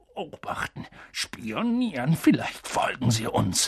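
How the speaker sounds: confused, puzzled, bewildered muttering. Answering a woman's trembling questions; confused mutter. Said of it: "murmelte Onkel Vernon verwirrt".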